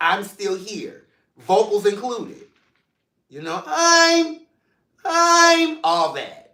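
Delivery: animated sing-song with pitch swooping all over. After an up and down week, say you are here in your Tisha Campbell voice. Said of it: "I'm here in my Tisha Campbell voice".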